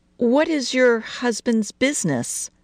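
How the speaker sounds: shy, hesitant, timid, slightly high voice. Mrs. Tyler asks Mrs. Harris a question, timid. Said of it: "Tyler asked timidly".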